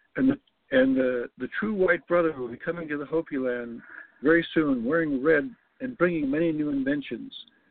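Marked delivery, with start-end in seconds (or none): none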